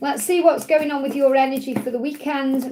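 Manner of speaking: plain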